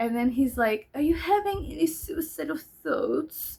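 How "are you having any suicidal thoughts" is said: French-sounding voice, higher. Retelling a psychiatrist's phone call, imitating his French-sounding accent. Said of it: "his accent".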